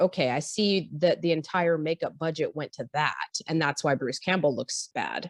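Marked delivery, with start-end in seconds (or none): none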